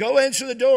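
shrill, very loud yelling. Telling a story, the speaker voices a mother yelling at him: imitating a mother yelling. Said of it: "she yells at him".

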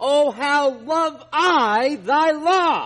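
loud, high exclamation full of expression. Reading the verse aloud with its exclamation point, not in monotone: expressive exclamation. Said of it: "That's the expression here".

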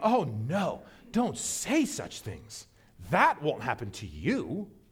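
condescending, patronising tone with swooping pitch. Acting out a disciple brushing off grim words: condescending as Peter. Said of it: "It comes across a bit condescending".

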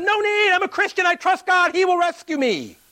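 shrill, loud, high-pitched shout. Telling a joke, the man on the roof waves off the helicopter: yelling. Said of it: "he yells at them".

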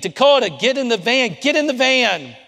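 shrill, frantic, high, loud screaming. Retelling the moment a boy was led away: retelling a scream. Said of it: "I'm looking at her and I'm screaming".

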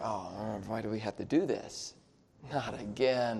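very quiet, low, complaining murmur under the breath. Speaker demonstrating how people murmur a complaint: low murmuring tone. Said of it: "It could be that low tone under".

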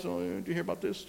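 very quiet, hushed murmur. Imitating complaining people passing on negativity, the speaker uses a low quiet voice. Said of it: "kind of in a low voice ... Just real quietly".

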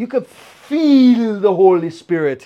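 put-on Guyanese accent with sounds stretched long. Recalling a coworker describing worship at the prayer palace, in a Guyanese accent. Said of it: "she was from uh, Guyana, and she had the accent".

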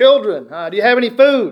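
mock, high, loud, projected, far-carrying yell. Acting out him calling out to them over the water: projected yell. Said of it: "It was a little more of a yell, right? You got to project your voice".

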